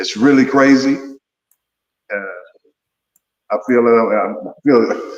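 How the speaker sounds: choked-up emotional voice. Talking about young men killing each other, getting emotional. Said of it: "I'm getting emotional right now".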